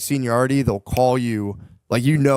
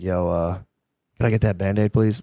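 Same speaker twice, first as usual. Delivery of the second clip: put-on nice, very polite tone; 2 semitones lower than usual. Recounting a flight, the speaker replays asking the lady for a Band-Aid; retelling asking very nicely. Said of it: "Very nicely".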